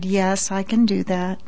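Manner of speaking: speaking calmly. Narrator answers, asked to phone and act as a doctor, in a calm voice. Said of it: "but in a calm voice I answered".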